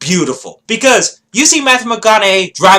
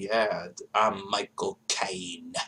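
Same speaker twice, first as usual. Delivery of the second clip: very low, very quiet, flat, gloomy monotone drone; 13 semitones lower, 19 dB quieter than usual. Mocking an actor's role as monotone and depressed: monotone, mock-depressed Michael Caine impression. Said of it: "Here he was really monotone and boring, and he's always depressed".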